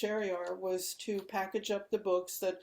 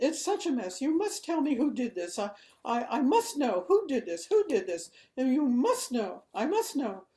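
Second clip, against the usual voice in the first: put-on very British accent, loud and agitated; 5 semitones higher, 6 dB louder than usual. The speaker retells what Kitty said to them, imitating Kitty's British accent. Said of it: "A very British accent".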